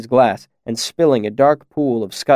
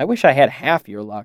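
ordinary delivery, nothing marked

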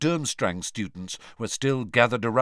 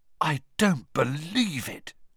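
astonished, floored, stunned disbelieving voice; 4 semitones higher than usual. Reading a novel aloud, a character's line as students file back, stunned. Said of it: "Ron said in a stunned voice".

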